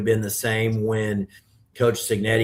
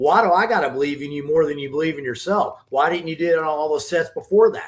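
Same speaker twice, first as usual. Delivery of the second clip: mock worked-up, fired-up, pitched-up delivery; 6 semitones higher than usual. Retelling what he said to someone at the rack, retelling being fired up. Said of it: "I was fired up".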